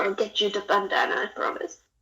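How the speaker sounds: quiet muttering, whispering under breath. Apologizing in character to a frog named Bubbles: whispering under breath. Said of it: "I'm just gonna whisper in my breath".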